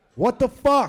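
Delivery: fake booming angry outburst. Recounting the anger returning on seeing two people, retelling an angry outburst. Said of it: "fucking anger just came fucking right back".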